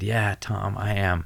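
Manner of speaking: slow, put-on sobbing voice. Retelling answering a sergeant's question while sobbing, imitating own sobbing words. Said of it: "Just sobbing".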